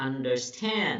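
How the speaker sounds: understand, with stress on final syllable -stand. Teaching metrical feet with an example word, stress on last syllable of understand. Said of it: "The two first syllables are unstressed, while the last syllable is being emphasized".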